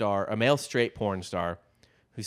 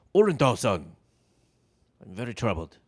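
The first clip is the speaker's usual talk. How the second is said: poor, clearly put-on fake Japanese accent; 3 dB louder than usual. Joking around with the other speaker, trying out a line in a bad Japanese accent. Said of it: "I don't have a good Japanese accent anyway".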